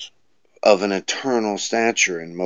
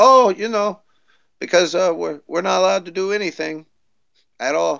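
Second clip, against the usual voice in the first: very high-pitched, put-on Canadian accent; 10 semitones higher than usual. Retelling what Canadian friends say about a protest, put-on Canadian accent. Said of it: "And they're like".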